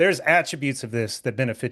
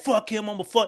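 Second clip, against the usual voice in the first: high, country, southern drawl; 8 semitones higher than usual. Describing a fighter's trash talk before his knockout: imitating Dustin Poirier's southern drawl.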